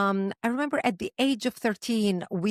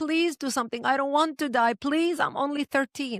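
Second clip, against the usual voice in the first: mock tearful, high, sobbing pleading voice; 6 semitones higher than usual. Speaker recalling begging as a thirteen-year-old in a bomb shelter, retelling a sobbing plea. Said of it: "and I'm sobbing".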